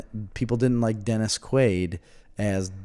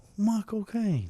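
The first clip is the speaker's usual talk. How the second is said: put-on British accent, higher pitch; 11 semitones higher, 3 dB quieter than usual. Trying the trick just taught: Michael Caine British accent. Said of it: "teach me how to Michael Caine".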